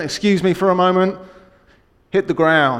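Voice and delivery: distinct, commanding, put-on American accent. Retelling what a man in a lift said to her elderly mum, imitating a commanding american accent. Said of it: "in a distinct, commanding American accent".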